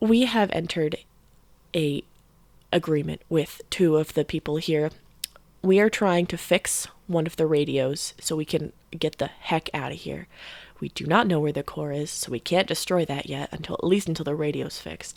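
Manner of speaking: soft, close half-whisper right at the ear. Leaning close to tell a character about their situation: half-whispering. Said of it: "I'm gonna get really close to him and whisper this".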